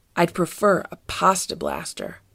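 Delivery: ordinary delivery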